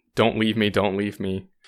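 ordinary talk

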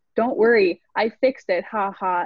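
ordinary delivery

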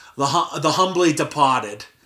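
doubtful put-on Boston accent. Asked to say a film title in a Boston accent: Boston accent. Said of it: "my Boston accent's any good".

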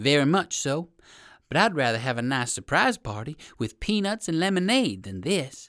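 ordinary delivery, nothing marked

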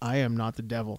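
very quiet, low, hushed, flat deadpan. Retelling a man's answer after Conan calls him the devil: retelling a deadpan reply. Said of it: "he gives him a deadpan stare".

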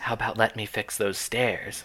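put-on whispery voice. Retelling a movie scene, imitating Steven's whisper talking. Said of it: "doing his standard whisper talking".

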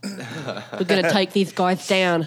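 speaking with a lisp.

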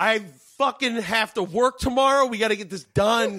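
mock screaming. Retelling telling a roommate off during recording: retelling screaming at someone. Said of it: "screaming at him".

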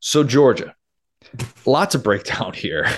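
disappointed, let-down dad voice. Turning to the next team after a tough loss: disappointed father tone. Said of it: "You said that like a disappointed father".

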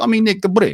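put-on Russian accent. Retelling what a Russian coworker told him, Nick Svortman's Russian accent. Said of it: "He was from like hardcore communist Russia".

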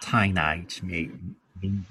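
low, quiet Australian accent, in an undertone. Showing friends an Australian accent on a show title, Australian accent in undertone. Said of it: "I can do Australian a little bit. You got to do it in an undertone".

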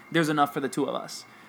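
usual speaking voice

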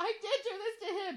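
very high laugh-crying. Retelling her answer when her mom blamed her: retelling sobbing with laughter. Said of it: "I'm like in between sobbing because I'm hilariously crying".

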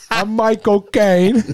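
very high, squeaky, badly done celebrity-style voice. Doing a quick impression after the actor is named: worst Michael Caine impression. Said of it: "That's the worst Michael Caine impression I have ever heard".

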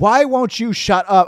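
high-pitched rant. Retelling watching a long acceptance speech on television: retelling own ranting at the tv. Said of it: "I was actually ranting at the television".

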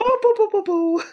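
high, odd cartoon bear mascot voice.

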